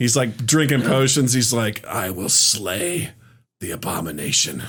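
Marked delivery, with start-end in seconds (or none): 1.9-4.6 deep, slow, drawn-out gravelly voice. Joking about the swordsman drinking potions: gravelly Geralt of Rivia voice. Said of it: "he's got a more gravelly voice than Batman".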